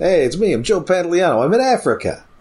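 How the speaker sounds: casual, breezy delivery, pitched very high. Speaker mocking an actor doing no accent in a movie, as Joe Pantoliano. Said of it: "Joe Pantoliano not doing an accent at all".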